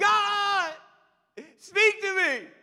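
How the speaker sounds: loud, high-pitched crying out.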